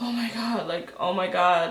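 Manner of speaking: drawn-out, panicky, freaked-out exclaiming. Retelling own reaction after the crash, imitating own past freaking out. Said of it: "I was, like, freaking out".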